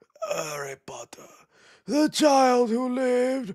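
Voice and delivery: slow, drawn-out, high, sinister villain voice. A speaker introducing a Harry Potter segment to viewers, Voldemort impression. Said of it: "That's my best Voldemort impression".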